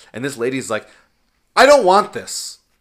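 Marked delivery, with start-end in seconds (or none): 1.5-2.5 shrill, very high, very loud shout. Retelling a lady in a closing store: imitating someone yelling. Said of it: "She just yelled".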